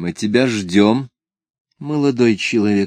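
ordinary delivery

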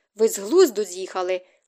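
usual speaking voice

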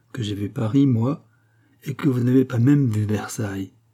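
ordinary delivery

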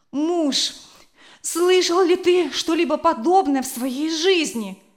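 enraged, furious, shrill outcry. A mother, woken before dawn by her son, cries out to her husband: furious outcry. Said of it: "вскричала мать, теперь уже совершенно озлобившись".

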